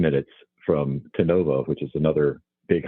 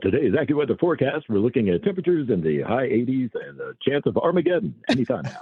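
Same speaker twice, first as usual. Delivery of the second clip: radio announcer voiceover voice, pitched much higher; 8 semitones higher than usual. Asked to give some of his voiceover sound, the speaker does his radio voiceover voice. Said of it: "Give us some of that voiceover sound".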